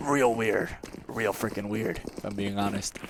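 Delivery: sinister, low, hushed villain-like voice. Answering a co-host, who then says he sounded like a villain; villain-like voice. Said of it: "you sounded like a villain".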